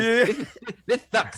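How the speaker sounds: sneering, belittling lisp, very high and loud. Retelling how a mad gamer sounds: imitating Addict's belittling lisp voice. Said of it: "that belittling lisp voice".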